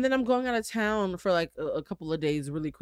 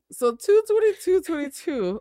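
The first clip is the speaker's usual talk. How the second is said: voice going much higher and louder; 13 semitones higher, 7 dB louder than usual. Speaking on camera, voice going higher. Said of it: "my voice just went higher".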